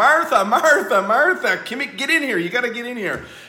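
loud, high-pitched yell.

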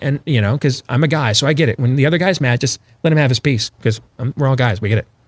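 plain

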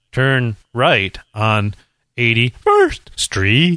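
sing-song, computerized navigation-system voice. Describing their phone's old navigation voice, the speaker imitates it: computerized Google navigation voice. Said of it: "the normal computerized voice that's like".

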